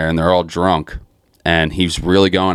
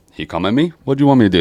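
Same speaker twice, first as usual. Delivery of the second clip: put-on blended Southern accent, pitched up high; 6 semitones higher than usual. Retelling a funny soundbite of a guy after a fist fight: southern plus Arturo Gatti accent. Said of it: "like his southern accent combined with the Arturo Gatti accent".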